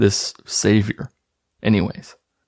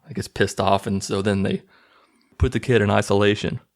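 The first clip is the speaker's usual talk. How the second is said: normal talking voice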